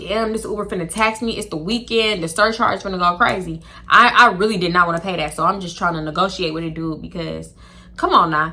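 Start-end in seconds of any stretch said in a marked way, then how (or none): none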